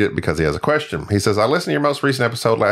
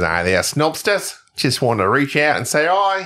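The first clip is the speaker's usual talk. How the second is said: imitated Australian accent; 5 semitones higher than usual. Host reads aloud an email from an Australian listener, Troy Clohessy in Australian accent. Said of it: "He appreciates when I do that accent".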